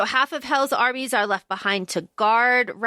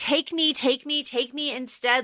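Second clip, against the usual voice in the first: mock desperate pleading, begging tone; 3 semitones higher, 4 dB quieter than usual. Retelling a book scene where a character begs: imitating someone begging. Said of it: "she's begging".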